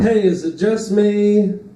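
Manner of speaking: lonely stand-up comic voice. Doing a run of impressions for the audience: lonely comedian impression. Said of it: "This is my impression of a lonely comedian".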